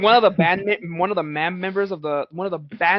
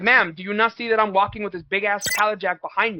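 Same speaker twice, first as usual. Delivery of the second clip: normal talking voice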